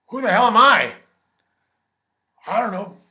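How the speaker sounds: put-on older movie-star voice, pushed very high and loud. Showing how an actor sounded after years of whiskey: older Al Pacino voice. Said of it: "Then he started to look like this".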